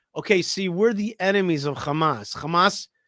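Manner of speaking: usual speaking voice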